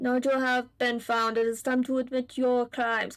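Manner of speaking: amateur, put-on German accent. Voicing a character who caught a stowaway: attempted german accent. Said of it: "how to do, like, a German accent".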